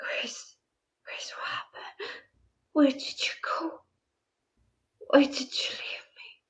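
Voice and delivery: hushed, breathy ghost whisper. Voicing a ghost who calls to Grace: ghost whispering. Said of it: "You can hear him whisper".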